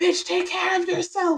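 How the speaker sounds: very high, piercing, high-pitched yell. Retelling what the body says about rest: imitating someone yelling. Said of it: "my body is just kind of yelling at me".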